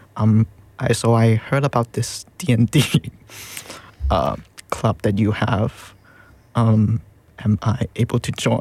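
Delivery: put-on shy voice. Retelling how they asked to join the D&D club, in a mock-shy voice. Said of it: "I said it in the most shy".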